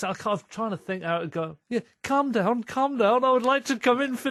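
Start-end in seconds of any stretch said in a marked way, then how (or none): 1.7-4.3 put-on Liverpool accent, much higher pitch. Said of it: "I don't even know what a Liverpool accent".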